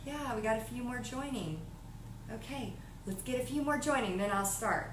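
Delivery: drowsy, half-asleep, soft, low-energy voice. Speaker acts out how she used to sound on Facebook Lives, imitating sounding asleep. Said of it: "it sounded like I was asleep".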